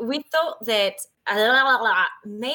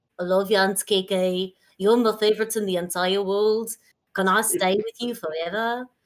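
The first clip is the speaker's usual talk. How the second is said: put-on terrible Liverpool accent; 3 semitones lower than usual. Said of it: "like a really bad [name]".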